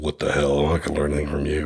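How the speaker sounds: low, quiet, put-on tough-guy dismissive tone. Retelling how he reacted to a soft-spoken life coach: imitating his hyper-masculine past self. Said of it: "I was like hyper masculine".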